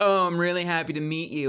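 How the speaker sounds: heavy, dripping sarcasm. Retelling a comedy sketch about a partygoer who always sounds sarcastic, retelling in a sarcastic tone. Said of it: "they always sound sarcastic".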